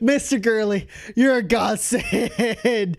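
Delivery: laughing uncontrollably while talking. Voicing a character rushing toward the medics, laughing uncontrollably while talking. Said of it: "laughing uncontrollably".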